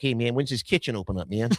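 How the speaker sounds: put-on dog character voice with a French accent. Retelling his dog coming into the kitchen this morning, in Louis the Frenchy dog voice. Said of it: "Louis the Frenchy dog voice".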